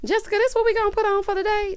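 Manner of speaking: high, silly mocking voice.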